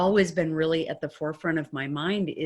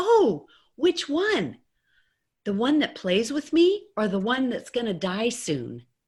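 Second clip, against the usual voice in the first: put-on tiny, high, sing-song four-year-old voice; 6 semitones higher than usual. Retelling what a four-year-old son asked: imitating a little four-year-old's voice. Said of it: "his little four-year-old voice said to me".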